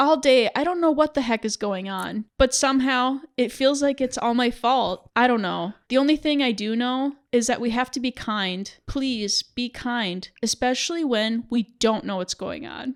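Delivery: ordinary delivery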